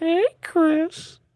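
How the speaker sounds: put-on very high, leering, drawn-out elderly voice. Greeting a chat viewer while drawing, in the old man from Family Guy voice. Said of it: "You don't know the old man from Family Guy?".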